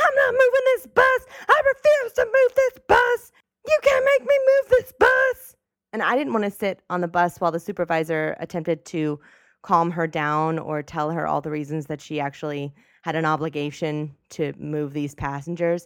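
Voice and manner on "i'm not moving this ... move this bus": shrill, very high-pitched screaming. Telling a bus story, acting out the driver calling a supervisor: retelling a driver's screaming. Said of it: "still screaming like".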